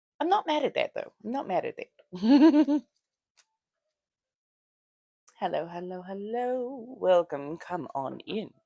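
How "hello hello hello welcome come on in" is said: put-on eighteenth-century colonial American accent. Greeting viewers as a vampire persona: put-on colonial American accent. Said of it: "seventeen hundreds colonial American".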